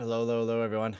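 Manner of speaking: out of breath. Greeting listeners after running home, out of breath. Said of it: "If I sound out of breath, I very much am".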